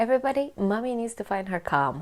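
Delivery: ordinary delivery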